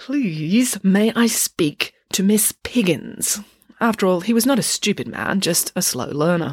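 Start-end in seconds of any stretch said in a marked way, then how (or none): 0.0-3.4 forced politeness spoken through clenched, gritted teeth. Reading a story aloud, the doctor asking to see miss piggins: through gritted teeth. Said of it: "through gritted teeth said".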